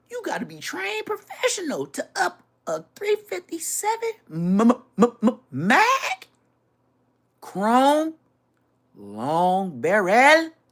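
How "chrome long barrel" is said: mock French accent, louder. Describing a gun's long barrel, saying it in a playful French-sounding accent. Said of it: "Like I'm from France".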